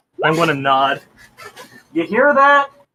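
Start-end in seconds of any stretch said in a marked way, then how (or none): 2.0-2.7 far-off, very high, loud shouted call. Calling out in character, turned away from the microphone: yelling. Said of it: "I yelled".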